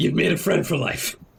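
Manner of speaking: acted, mock-tearful sniffling speech. Acting out what a woman said to them, imitating her sniffling. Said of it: "She's sniffling".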